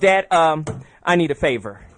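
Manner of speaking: slow, sassy tone with attitude. Retelling a daughter's words when picked up from school: imitating daughter's attitude. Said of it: "she has an attitude in her voice".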